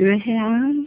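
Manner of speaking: ルエヘアン with soft, gentle rise at the end. Pronunciation drill, modeling the phrase: gentle rise at end of ルエヘアン. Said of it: "柔らかく、ルエヘアン。と上げますね".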